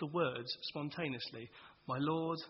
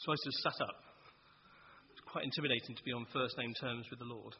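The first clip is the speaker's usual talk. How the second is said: ordinary delivery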